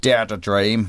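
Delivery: menacing, threatening-sounding Northern Irish accent. Showing how a country's slogan sounds when said: northern irish accent. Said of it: "if you say it in a Northern Irish accent".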